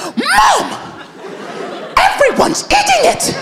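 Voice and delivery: very high, snapping, fed-up outburst, acted. Retelling the day the brother snapped at the mom: imitating a brother snapping. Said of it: "He was just like".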